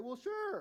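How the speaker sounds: casual, light delivery. Acting out own imagined answer to a question about envy: acting out a nonchalant reply. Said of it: "in kind of a nonchalant, like, no big deal way".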